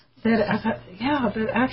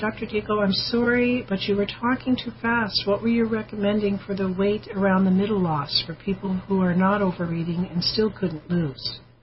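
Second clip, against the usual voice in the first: usual speaking voice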